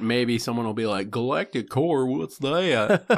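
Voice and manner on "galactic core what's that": very slow, high, stretched put-on Southern drawl. Imitating a podcast listener thought to be a moron: put-on Southern accent. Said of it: "everybody I think is a moron I give a Southern accent to".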